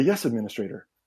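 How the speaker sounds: nondescript, neutral, soothing, reassuring, genderless system voice. Voicing the station AI answering the administrator: nondescript reassuring genderless voice. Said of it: "nondescript, very, uh, reassuring, um, genderless voice".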